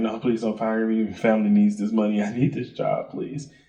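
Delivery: put-on sad, begging, pleading tone. Retelling a fake firing at work, imitating acting real sad. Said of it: "I started acting real sad".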